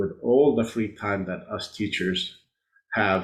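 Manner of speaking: ordinary talk, nothing marked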